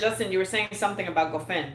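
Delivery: normal talking voice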